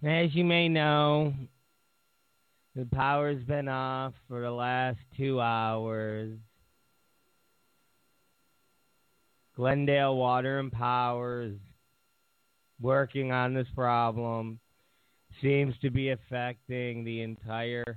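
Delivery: flat, level monotone, "hours" drawn out. Reading the building manager's email about the power being off, flat monotone. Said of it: "I know I'm saying it in a monitor. That's what my building manager sounds like".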